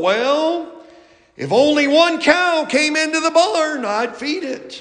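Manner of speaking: slow, slight country drawl. Telling a joke, a farmer answers the preacher, slight drawl. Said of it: "replied with a little bit of a drawl".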